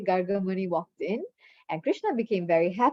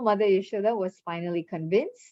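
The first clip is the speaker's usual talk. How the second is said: plain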